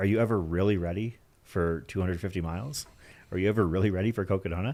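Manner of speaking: put-on deadpan delivery. Retelling a runner's answer on being ready for the race: imitating a deadpan delivery. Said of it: "straight-laced, deadpan, she said".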